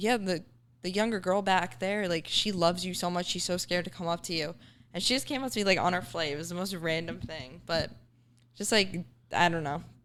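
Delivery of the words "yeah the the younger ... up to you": ordinary talk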